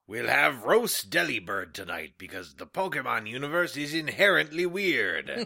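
swaggering, put-on pirate captain voice. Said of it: "how a pirate would say it".

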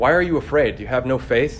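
mad, loud, angry tone. Reading the rebuke to the disciples as if he's mad at them. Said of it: "like he's mad at them".

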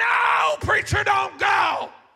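mock very slow, high, stretched-out shouting scream. Retelling a plea to a departing prophet: imitating someone screaming. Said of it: "He's screaming".

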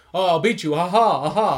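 hammy, loud, overacted, badly dubbed cartoon voice. Recalling a show that parodied bad English dubs, the speaker imitates it: Dexter's Laboratory bad-dub voice. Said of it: "parodying the whole like bad English dub".

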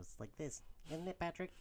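high squeaky cartoon voice. Correcting another speaker's impression, showing it in a SpongeBob voice. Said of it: "that's SpongeBob".

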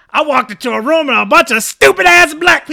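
high, very loud shout, like on stage. Giving an example joke the way it would sound: Chris Rock voice. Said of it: "if you hear it in Chris Rock's voice".

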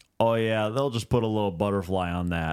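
thick, ultra-Midwestern gym coach voice. Retelling what the gym teacher said about a bleeding lip: imitating a midwest gym teacher. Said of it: "ultra, like, Midwest ... fat gym teacher".

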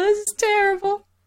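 tearful while talking. Remembering childhood cartoons with friends, tearful while talking. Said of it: "I'm crying right now".

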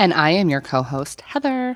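put-on Valley Girl way of talking. Introducing herself as co-host on the podcast: Valley Girl voice. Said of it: "that was really like a Valley Girl".

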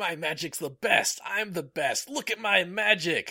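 high, loud, excited, aggressive, boastful shout.

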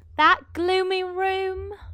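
high, slow posh actor voice. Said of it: "you can be Jonathan Adams".

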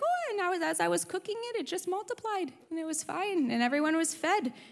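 offhand, unbothered voice. Retelling a grandmother's story of food multiplying: imitating Baba's nonchalant tone. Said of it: "Baba's very nonchalant".

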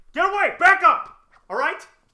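yelling at full blast.

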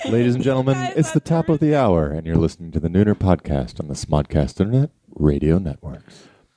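velvet-smooth, smooth radio announcer voice. Announcing the top of the hour on the podcast: velvety voice. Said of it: "you have the most velvety voice".

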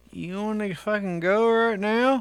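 talking through unmoving lips. Speaker quotes what they said to e, doing a ventriloquist impression. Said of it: "my best fucking, ventriloquist impression".

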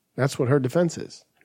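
plain

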